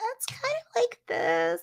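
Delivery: very high, soft, sing-song classroom teacher voice. Talking about how teachers speak to kids: high-pitched teacher voice. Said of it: "It's very high pitched".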